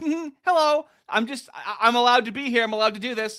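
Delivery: very high-pitched, squeaky voice. Retelling how people filming others act: imitating people who film confrontations. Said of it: "They love going like".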